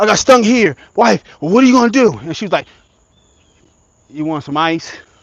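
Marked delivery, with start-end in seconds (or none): 4.1-5.0 acted, unbothered, calm, even-toned, low voice. After getting stung, the speaker mimics his wife offering ice, imitating a calm voice. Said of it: "you are too calm for what I'm going through".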